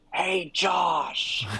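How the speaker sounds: stage whisper, pushed loud. Showing how they whisper on voice chat: very loud whisper. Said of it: "I try to whisper very loudly".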